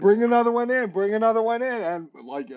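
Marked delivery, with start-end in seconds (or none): 0.0-1.7 high, victorious, crowd-rousing triumphant shout. Describing an imagined fight, the speaker acts out you shouting, mock shouting. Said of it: "You're shouting".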